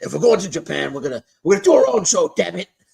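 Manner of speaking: loud, rough put-on voice, swinging wildly up and down. Recounting a WWE story, doing McMahon voice. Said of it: "I'm gonna do my McMahon voice".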